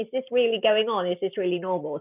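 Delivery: ordinary delivery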